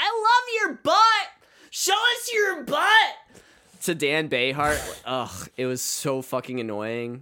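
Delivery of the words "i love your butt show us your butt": very high, shrill, loud yell, "love" drawn out. Retelling an audience member at a seated show, imitating someone yelling. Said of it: "kept yelling".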